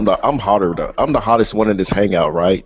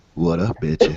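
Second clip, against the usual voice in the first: whispered, breathy, put-on flirty voice; 5 dB quieter than usual. Breaking out a put-on voice to flirt with Melanie as a joke: put-on flirty voice. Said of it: "I gotta break out my voice".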